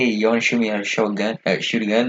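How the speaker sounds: ordinary talk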